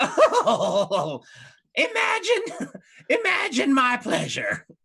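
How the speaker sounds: put-on girlish giggling. Narrator voices a woman charmed by two young men, giggling like a schoolgirl. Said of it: "she giggles like a little schoolgirl".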